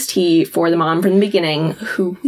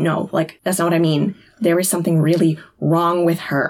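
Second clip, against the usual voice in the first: usual speaking voice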